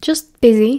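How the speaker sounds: ordinary delivery, nothing marked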